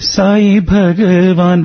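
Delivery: high, slow, half-pleading call. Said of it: "but still not completely pleading".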